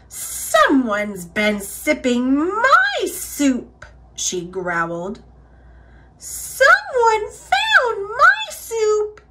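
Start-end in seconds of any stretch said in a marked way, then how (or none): 6.1-9.1 very high, squeaky little voice. Reading a bear story aloud as the bears find their soup, in Baby Bear's high squeaky voice. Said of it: "sputtered Baby Bear in her high, squeaky voice".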